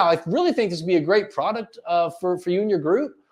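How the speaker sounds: second-guessing, insecure tone rising on group. Speech tips example of an insecure-sounding sentence: rising pitch at the end on group. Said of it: "when you go with up inflection, you sound very insecure".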